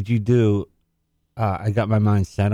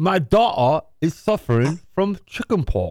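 high mock accent with D and T sounds dropped. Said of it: "you just gotta say "da," like, get rid of the D, the T".

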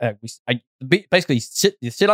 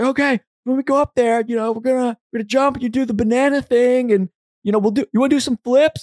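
mock yelling, pitched much higher; 11 semitones higher than usual. Retelling how he yells the plan before a jump: imitating someone yelling. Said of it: "And he's yelling".

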